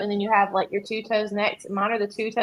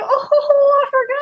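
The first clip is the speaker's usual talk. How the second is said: very high, loud, fake innocent tone; 7 dB louder than usual. Retelling a grandmother's christmas joke: imitating grandmother's fake forgetting. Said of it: "And she'd go".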